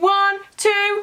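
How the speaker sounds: high, rising, loud count building to a big shout.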